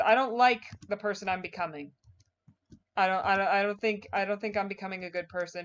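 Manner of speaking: normal talking voice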